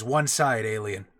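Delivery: crackling, radio-filtered electronic voice. Voicing a squad leader who blocks a player: electronic crackling voice. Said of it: "the electronic crackle of his voice".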